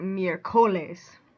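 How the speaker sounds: miércoles stressed on o. Explaining spanish accent marks, showing the rule-based reading: miércoles stressed on the o. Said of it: "if you were going to say this by the rule".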